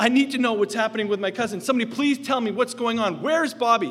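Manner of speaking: high, desperate shouting plea. Recalling trying to find a doctor for news of his cousin, retelling a shout. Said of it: "And I'm shouting out".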